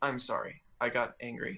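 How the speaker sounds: ordinary talk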